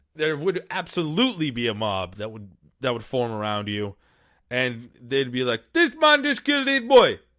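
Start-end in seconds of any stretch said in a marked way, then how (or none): 5.7-7.2 very high, loud, terrible put-on Haitian accent. Imagining a mob's reaction to an attack: terrible Haitian accent. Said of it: "It's my terrible Haitian accent".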